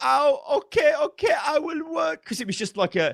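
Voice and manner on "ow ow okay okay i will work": very high, bad, dodgy put-on Middle Eastern accent. Quoting a game's worker unit when selected: put-on dodgy Middle Eastern accent. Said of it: "a dodgy Middle Eastern accent".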